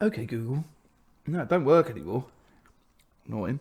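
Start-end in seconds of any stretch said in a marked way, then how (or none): 0.0-0.6 mock posh voice, quieter. Calling the phone assistant after being asked to: put-on posh voice. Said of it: "Do your old OK Google in your old posh voice".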